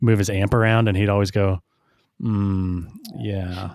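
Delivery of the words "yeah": mock reluctant, passive-aggressive "yeah". Imitating a bandmate asked to help move an amp: mock passive-aggressive yeah. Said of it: "Kind of like this passive aggressive".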